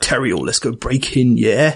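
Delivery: faux put-on Cockney accent. Describing how characters in the Thieves Guild talk: faux Cockney accent. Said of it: "kind of faux Cockney by someone who's never been to London".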